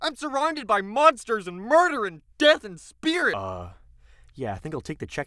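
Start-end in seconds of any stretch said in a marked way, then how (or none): 0.0-3.3 mock, acted-out yelling, much higher in pitch. Summing up a show, quoting a woman who yells at her date: retelling a yell. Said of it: "she yells at him like".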